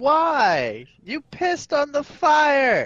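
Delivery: very high, furious, angry yell, drawn-out why. Yelling at a companion who pissed on the fire: yelling in character. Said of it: "I'm yelling at him in common".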